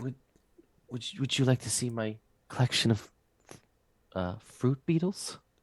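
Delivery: shy, soft, faltering, timid stammer. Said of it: "she looks at you, um, like, timidly".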